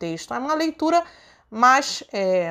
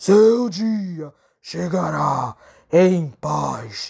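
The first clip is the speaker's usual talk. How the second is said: very deep, hollow, very low cavernous voice; 8 semitones lower than usual. Reading a narrated poem as a voice speaks over the cemetery, in a cavernous voice. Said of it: "voz cavernosa".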